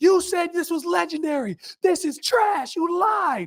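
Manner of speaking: acted drawn-out angry yelling. Retelling a cold game, imitating own angry yell at a teammate. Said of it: "I'm yelling at Deshaun Watson".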